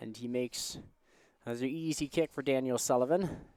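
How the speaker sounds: sarcastic commentator voice rising at the end. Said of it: "A little bit of sarcasm there".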